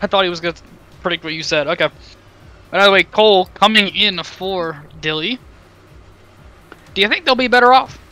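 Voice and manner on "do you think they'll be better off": quick delivery, voice breaking and cracking high. Asking the other speaker a question, voice cracking. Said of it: "my voice just cracked".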